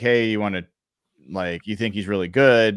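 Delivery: ordinary delivery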